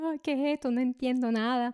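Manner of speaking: trembling, high, tearful, bewildered crying.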